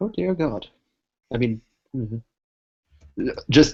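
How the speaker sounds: put-on muttering voice. Speaking as Zay so no one can hear, muttering under his breath. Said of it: "says that under his breath, very quietly".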